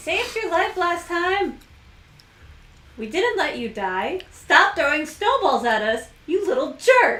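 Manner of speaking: booming, very loud, drawn-out yell. Playing a character who yells back at a kid throwing snowballs: yelling back in character. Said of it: "I yell back".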